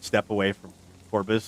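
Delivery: ordinary talk, nothing marked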